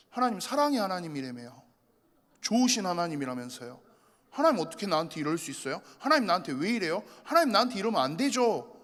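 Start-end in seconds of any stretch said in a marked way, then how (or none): none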